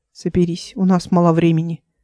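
ordinary delivery, nothing marked

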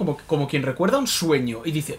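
ordinary delivery

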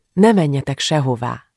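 ordinary delivery

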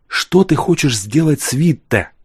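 hushed whisper, barely voiced. She questions the tsar about Witte, whispered. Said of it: "спросила она шепотом".

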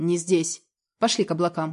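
ordinary delivery

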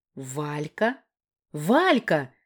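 loud exclaiming outburst, crying out. Natasha, hearing Valka on the phone, exclaiming. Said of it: "воскликнула Наташка".

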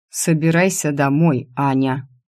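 usual speaking voice

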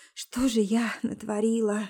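ordinary talk

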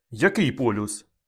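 plain reading voice

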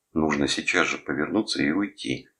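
ordinary delivery

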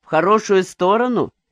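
sarcastic, needling, mocking, sceptical tone. Spiridon replying to Migdya, asking mockingly. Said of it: "насмешливо спросил Спиридон".

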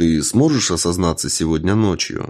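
ordinary delivery, nothing marked

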